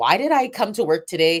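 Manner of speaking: ordinary talk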